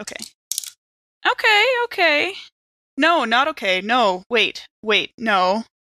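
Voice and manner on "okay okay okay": hopeful, wishful, very high little okays. A player told to roll to escape in a tabletop game: hopeful. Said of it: "me going, okay, in a hopeful voice".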